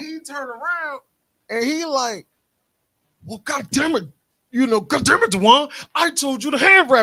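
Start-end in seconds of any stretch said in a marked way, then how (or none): 3.2-7.0 loud, angry yell in a temper. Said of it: "why you yelling?".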